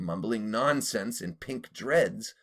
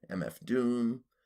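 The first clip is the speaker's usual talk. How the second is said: usual speaking voice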